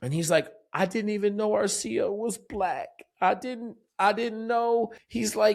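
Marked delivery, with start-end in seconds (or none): 0.7-4.9 put-on crying voice. Retelling what a crying kid said on a call that evening, imitating someone crying. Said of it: "he's crying".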